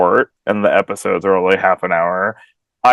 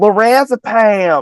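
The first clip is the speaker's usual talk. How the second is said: put-on screaming, higher; 13 semitones higher, 4 dB louder than usual. Retelling what many people kept screaming: imitating people screaming.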